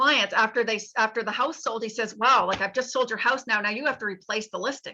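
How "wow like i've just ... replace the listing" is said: jokey, mock-humorous delivery. Quoting a man joking to his clients after their house sold, retelling a joking remark. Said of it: "he would say in a humorous way".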